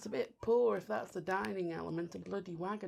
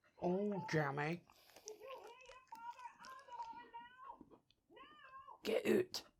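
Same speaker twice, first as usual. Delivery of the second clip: very quiet, very slow, very high Scottish accent; 9 dB quieter than usual. Tasting a jammy wagon wheel biscuit on a comedy podcast: Scottish accent. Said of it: "Don't know why I'm doing a Scottish accent".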